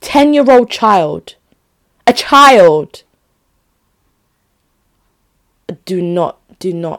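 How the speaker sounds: worked up, agitated. Describing police handcuffing a ten-year-old boy, agitated. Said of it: "I'm agitated right now".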